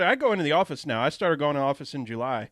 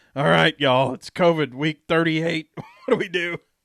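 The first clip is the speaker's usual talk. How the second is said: put-on loud, drunken-sounding call, like very drunk. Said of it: "pissed drunk going".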